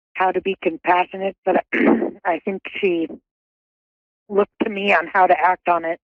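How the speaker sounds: a bit emotional, halting, phrases breaking up. Answering a reader who says she is here with them: sounding a bit emotional. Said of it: "You sound a bit emotional".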